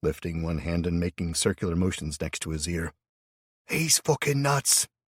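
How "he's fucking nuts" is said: raspy, hoarse, carrying stage whisper, pitched up. Narrator reading a character's aside about another man, hoarse stage whisper. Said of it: "he said in a hoarse stage whisper".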